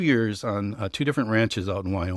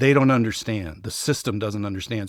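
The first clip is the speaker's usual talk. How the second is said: ordinary talk, nothing marked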